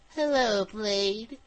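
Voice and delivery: high, bug-like insect character voice. Narrating a story, a woman on a transmission greets Blade: Kerrigan bug-like voice. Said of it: "She said in a bug-like voice".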